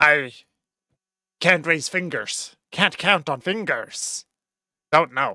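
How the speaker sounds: goblin character voice, put-on creature voice. In a game, voicing a goblin asked how many are left, goblin voice. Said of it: "It's a really good goblin voice".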